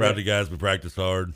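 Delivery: mimicked flat, emotionless voice. Mocking how Satterfield sounds after games, flat Satterfield impression. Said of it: "no change in emotion or like in his voice".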